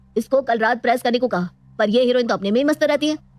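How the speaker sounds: irritated, angry, scolding griping. Complaining to his mother about his wife: shouting angrily. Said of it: "तू बहू पर इतना चिल्ला रहा है?".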